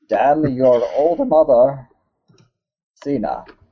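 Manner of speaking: put-on Russian accent, thrown out high.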